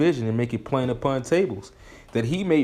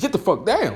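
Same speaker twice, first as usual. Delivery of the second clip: shouting, higher pitch. Describing how a parent gets on their kids after warning them, shouting. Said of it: "you trying to talk softly to your kids".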